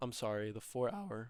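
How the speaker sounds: big voice crack, breaking mid-phrase. Explaining a trading chart and correcting a mistake, with a big voice crack. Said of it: "big voice crack".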